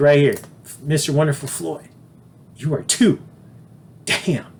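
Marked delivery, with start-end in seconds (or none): 0.0-3.2 imitated hushed whisper. Retelling what his tailor whispered in his ear during a fitting, retelling a whisper. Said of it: "She whispers in my ear".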